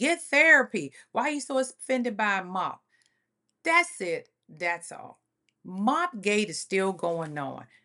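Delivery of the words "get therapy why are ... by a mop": mock, loud, screamed outburst. Retelling a quarrel, quoting what Tiffany yelled: imitating someone screaming. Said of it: "Tiffany studied screaming".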